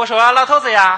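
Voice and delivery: put-on old Beijing accent. Asked to imitate his mother's speech, doing an old Beijing accent. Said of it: "说话老北京口音".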